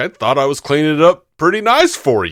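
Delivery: big, animated sing-song delivery with wide pitch swings. Retelling a film scene, quoting Chris Farley's reply: Chris Farley impression. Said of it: "And he's like".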